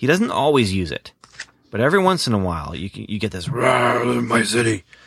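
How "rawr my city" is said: superhero voice with "rawr" stretched out.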